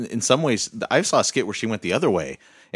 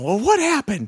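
put-on high-pitched elderly woman voice; 5 dB louder than usual. Describing a favorite skit, one old church lady asks the other, old church lady voice. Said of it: "dressed up like two old ladies at church".

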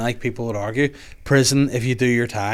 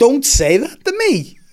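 high, slow, loud horrified protesting tone. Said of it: "I'm like".

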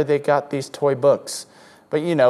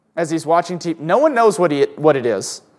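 plain

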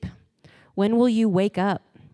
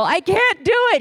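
put-on very high, called-down yell; 9 semitones higher, 4 dB louder than usual. Recounting being stuck partway up and calling down to the girl, retelling yelling down. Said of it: "I'm like yelling down at the girl".

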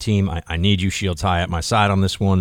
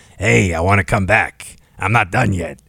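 put-on old talk show host voice. Joking about retiring late, imitating Larry King. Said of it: "It's my Larry King impression".

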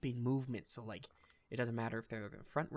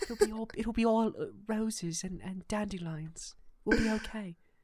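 put-on very loud British accent, pitched very high; 9 semitones higher, 8 dB louder than usual. Giving a hopeful speech as an impression: Keira Knightley impression. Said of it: "That's my Keira Knightley impression".

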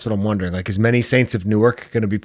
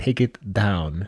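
put-on Russian-accented voice, quieter; 4 dB quieter than usual. Retelling a movie scene with Oreos: John Malkovich impression. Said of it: "Is that your John Malkovich?".

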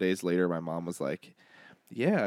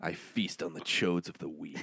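hushed storybook fantasy villain voice; 3 semitones lower, 5 dB quieter than usual. Introducing the next segment of the show, in a fantasy villain voice. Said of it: "it sounds like a great fantasy villain".

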